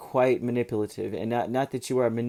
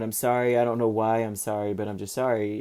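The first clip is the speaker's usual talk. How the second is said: ordinary delivery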